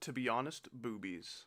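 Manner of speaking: ordinary delivery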